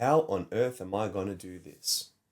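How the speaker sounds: normal talking voice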